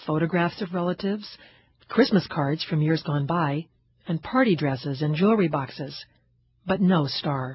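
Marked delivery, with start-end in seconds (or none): none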